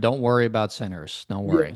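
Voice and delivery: acted whispering. Joking about a player's wife reassuring him: imitating someone whispering. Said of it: "she's whispering".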